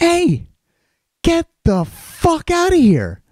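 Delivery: very high swooping shout, drawn out. Retelling ordering a man away from the garage: retelling own yell. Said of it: "and again, I go".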